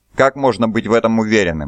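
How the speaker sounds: plain reading voice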